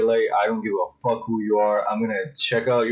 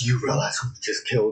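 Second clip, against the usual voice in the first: severe, sternest possible voice. Retelling a father warning his son about the killing: imitating a very stern voice. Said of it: "he tells him with the most stern voice".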